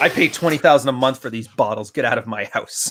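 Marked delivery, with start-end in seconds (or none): none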